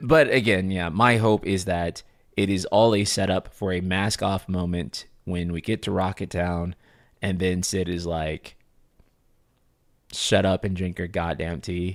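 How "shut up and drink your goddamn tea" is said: ordinary delivery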